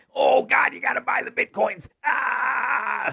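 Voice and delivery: shrill, hoarse, full-throated hollering, very high, drawn out. Mocking the guy on the news about Bitcoin: Cramer impression, yelling. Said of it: "The guy who fucking yells".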